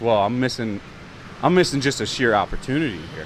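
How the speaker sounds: ordinary delivery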